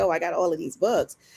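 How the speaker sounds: ordinary delivery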